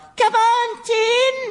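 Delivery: shout in a very high voice. Retelling shouting at a tennis player about to serve for match point: very high-pitched shout. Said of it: "in a very high-pitched voice".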